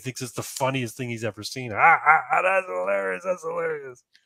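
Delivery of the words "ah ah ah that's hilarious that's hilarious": put-on high, howling, roaring drunken laughter. Telling a joke, acting out the drunk on the bus: imitating a drunk howling with laughter. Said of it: "the drunk just starts fucking howling".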